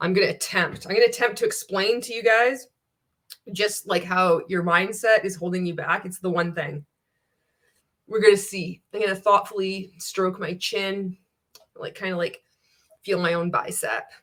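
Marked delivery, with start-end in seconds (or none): none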